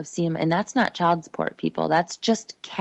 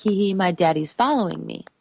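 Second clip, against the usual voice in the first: put-on giggling little-kid voice. A mother retells a talk with her daughter, imitating her giggling. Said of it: "And she's like giggling".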